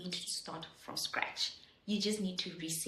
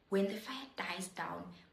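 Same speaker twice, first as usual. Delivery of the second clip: ordinary talk, nothing marked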